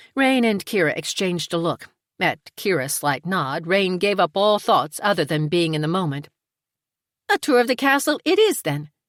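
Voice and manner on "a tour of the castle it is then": as chipper as it gets, bright, pitched up. A woman offers a castle tour to those at the table, in her most chipper voice. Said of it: "Rain said in her most chipper voice".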